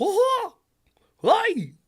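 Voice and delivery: squealed high, loud and bouncy. Trying out a Mickey Mouse impression for the chat: Mickey Mouse impression. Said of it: "Mickey Mouse would be like".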